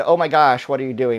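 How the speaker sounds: put-on bored, flat delivery. Retelling own earlier test line read aloud, imitating own bored delivery. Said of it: "Like, really, really bored".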